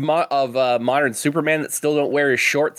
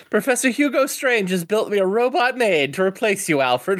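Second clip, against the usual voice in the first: put-on spoiled, snotty, bratty rich-kid voice, pitched up; 6 semitones higher than usual. Playing a snotty rich kid taunting alfred: snotty rich kid voice. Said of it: "just being a snotty rich kid".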